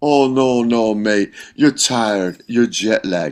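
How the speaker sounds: put-on teasing Scottish accent with heavy sarcasm. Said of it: "kind of like sarcastic".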